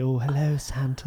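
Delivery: put-on seductive, sexy voice, a bit silly. Retelling a comedy scene where Claire Nielsen says her line: Claire Nielsen sexy voice. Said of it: "she'd be doing some sexy voice".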